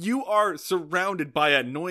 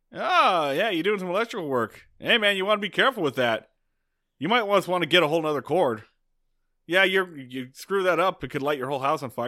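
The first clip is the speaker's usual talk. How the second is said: mock, smug know-it-all tone. Retelling a scene where Roger watches Andy attach a plug: imitating Roger's know-it-all tone. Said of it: "look over your shoulder and tell you what you're doing wrong".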